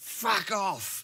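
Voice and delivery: put-on British accent, pitched very high. Retelling what he said to people with pitchforks, in an attempted British accent. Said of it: "in the best best British accent I could".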